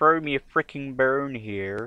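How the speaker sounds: very bad villain voice, belted out loudly. Playing a game and quoting a film line in a very bad Doctor Evil impression. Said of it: "my very bad, um, Doctor Evil impression".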